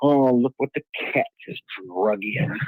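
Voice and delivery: low muttered mumble under the breath. Recalling a man and woman walking into a restaurant: mumbled under breath. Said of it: "I kind of mumbled under my breath".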